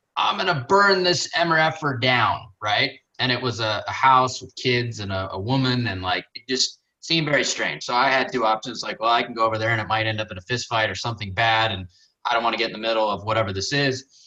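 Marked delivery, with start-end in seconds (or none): 0.2-2.5 drawn-out, dragged, high screaming. Telling a story, quoting a guy heard near a house: imitating a man screaming. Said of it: "screaming at the top of his lungs".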